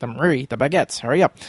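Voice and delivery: ordinary talk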